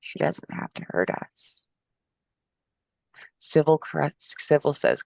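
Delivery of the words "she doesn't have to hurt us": put-on whispering voice, lower. Voicing Sybil, who leans forward inside their heads: Sybil whispering. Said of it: "You can feel her kind of whispering in our own head".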